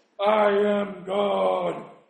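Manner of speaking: loud, very slow, deep booming god voice. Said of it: "we would take the voice like".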